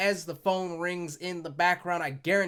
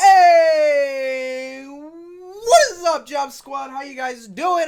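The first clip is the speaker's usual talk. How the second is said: booming yell, very loud, very slow and drawn out; 9 semitones higher, 13 dB louder than usual. Opening the show, greeting the job squad: yelling. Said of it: "I'm sorry for the yelling".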